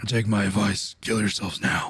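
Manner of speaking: put-on royal guard voice, deep and low. Voicing the enemy addressing the shield guards, in a deep character voice. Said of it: "he also has like a the deep voice".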